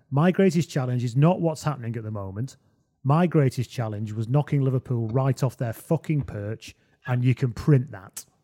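ordinary talk

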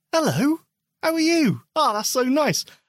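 high, patronising voice.

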